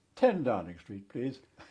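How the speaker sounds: very loud voice, projected for all to hear. Retelling giving a taxi address among senior officers, in a very loud voice. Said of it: "I said in a very loud voice".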